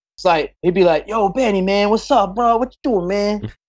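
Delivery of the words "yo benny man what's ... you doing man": high-pitched, put-on street gangster slang voice. Describing a man the boys met on tour, the speaker imitates him talking like a real gangster. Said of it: "He talks like a real gangster".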